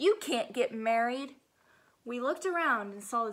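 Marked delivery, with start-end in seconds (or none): 0.0-1.3 scary, frightening voice, slower. Narrating a story, voicing the stink bug interrupting the friends, in a scary voice. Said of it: "said a scary voice".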